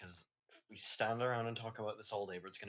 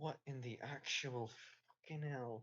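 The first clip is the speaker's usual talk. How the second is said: muttered under the breath, barely voiced; 3 semitones higher, 5 dB quieter than usual. Voicing a character who walks along in disbelief: muttered under his breath. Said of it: "just under his breath".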